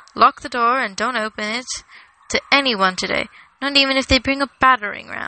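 plain

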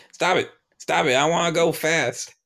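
high-pitched, shouted yell. Imagining taking over a speeding driver's voice to stop him, retelling a yell. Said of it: "I'm yelling".

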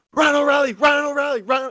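put-on high, wild sports radio announcer yelling. Act out the man on the radio going insane after ryan o'reilly scores, imitating a radio announcer yelling. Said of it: "He's yelling".

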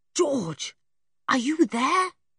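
whispering. Julian calls to George through a dark caravan window; whispered. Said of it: "he whispered".

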